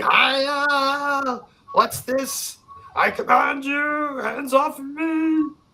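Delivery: very high, slow, drawn-out, outraged screaming. Voicing a character struggling against whipping tendrils: Silas Rue screaming. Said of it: "you hear Silas Rue screaming".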